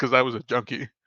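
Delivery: normal talking voice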